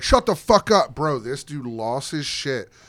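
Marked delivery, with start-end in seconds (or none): 0.0-1.2 angry snap, higher pitch and louder. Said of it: "Milk Chocolate was like".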